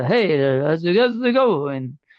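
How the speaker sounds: slow, loud Italian accent impression. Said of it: "direct, exact mimic-, imitation of him".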